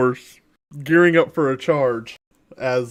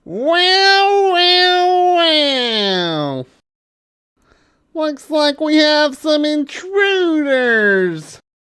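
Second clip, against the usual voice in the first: angry tiny fork voice, higher; 13 semitones higher, 3 dB louder than usual. Voicing a tiny fork who spots intruders: angry tiny fork voice. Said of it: "you see it furrow with anger".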